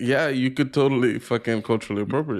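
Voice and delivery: ordinary talk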